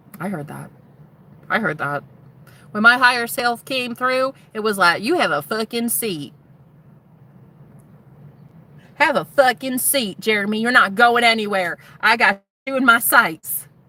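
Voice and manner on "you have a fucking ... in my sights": put-on Southern accent. Retelling what own higher self said to a viewer: Southern accent. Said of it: "my higher self has a Southern accent".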